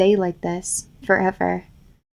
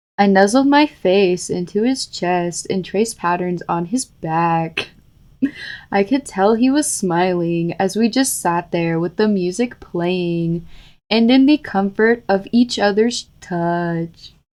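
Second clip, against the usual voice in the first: put-on text-to-speech narrator voice. Retrying a read-aloud passage, doing it in the TikTok narrator voice. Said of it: "Do it in the TikTok narrator voice".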